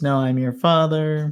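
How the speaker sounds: plain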